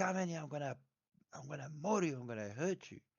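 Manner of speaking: high, urgent scream, rattled off quickly. Telling how people tried to pry open the hallway gate, he is retelling a scream. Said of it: "I'm screaming".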